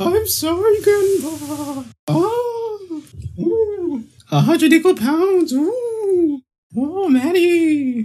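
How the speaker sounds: very high, really shitty, spooky put-on ghost voice.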